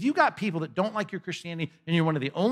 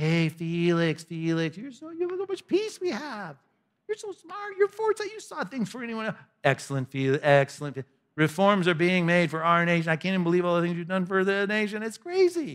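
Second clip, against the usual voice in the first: sarcastic, gushing, swooping, over-the-top flattering tone. Retelling a man's flattering speech on the stand, with sarcastic retold flattery. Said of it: "I read it with enough sarcasm in, in my voice".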